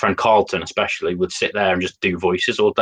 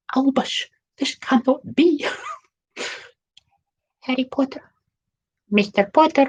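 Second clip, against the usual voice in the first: very high put-on woman's voice, pitch raised way up. Showing the go-to woman's voice from dressing up as characters, Professor McGonagall voice. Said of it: "this would be my go-to woman's voice".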